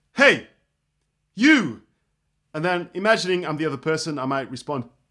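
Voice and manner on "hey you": very loud, booming, swooping call. Speaker demonstrating a line, imagining trying to get someone's attention. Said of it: "imagining I'm trying to get someone's attention".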